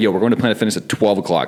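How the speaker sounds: ordinary talk, nothing marked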